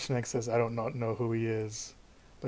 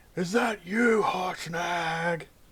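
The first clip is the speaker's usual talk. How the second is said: big booming, drawn-out, high-pitched call; 6 semitones higher, 4 dB louder than usual. A voice calls out from down the hall, booming voice. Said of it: "booming voice".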